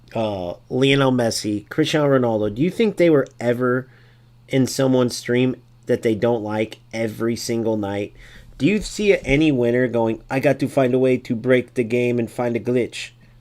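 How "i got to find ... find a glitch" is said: put-on Portuguese accent. Imitating a winner complaining about a broken game: Ronaldo Portuguese accent.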